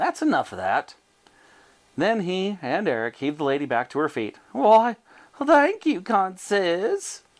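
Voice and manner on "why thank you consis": very slow, high, drawn-out coo. Helped back to her feet, Bessie thanks the men, cooing. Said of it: "cooed Bessie".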